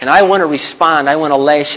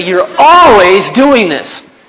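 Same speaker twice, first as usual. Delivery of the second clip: loud, high, accusing, complaining tone. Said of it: "You say".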